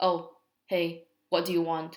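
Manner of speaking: cold, unfriendly, without warmth. Demonstrating a greeting said coldly instead of warmly, cold and unfriendly. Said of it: "If I'm doing it coldly".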